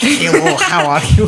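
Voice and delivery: put-on booming, very slow, loud heavy Russian accent. Echoing another speaker's childhood accent: imitating a heavy Russian accent. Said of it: "a heavy, ... a Russian accent".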